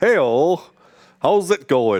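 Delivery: light northern English accent. Testing how a first word sets the tone, in a northern accent. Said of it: "It's going a bit northern now".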